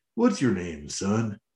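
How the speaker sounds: weird, super-smooth, low, soft cowboy voice. Quoting a line whose delivery they found funny, in Primal's smooth cowboy voice. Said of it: "in the weirdest like smoothest cowboy voice".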